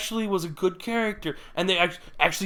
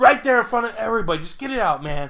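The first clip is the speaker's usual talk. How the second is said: usual speaking voice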